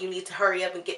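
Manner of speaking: put-on mean, impatient, hurried tone. Retelling begging for an epidural, the speaker voices her second side: retelling a mean, impatient demand. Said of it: "In the second voice, I'm like".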